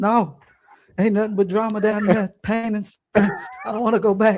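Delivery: very high, protesting, kicking-and-screaming yell. Told they have to go back, the speaker retells yelling their refusal. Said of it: "I'm yelling".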